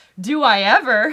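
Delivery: loud, eager exclamation.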